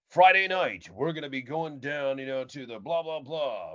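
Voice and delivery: booming, loud, big-voiced radio announcer voice. Recalling practicing at radio stations, the speaker mimics a big-voice announcer. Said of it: "the big voice announcer".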